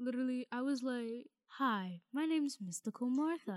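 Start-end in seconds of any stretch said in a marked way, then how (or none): 1.5-3.6 put-on soothing fairy voice. Recalling recording a school video, replaying her fairy character in a Mystical Martha voice. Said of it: "and very I was soothing".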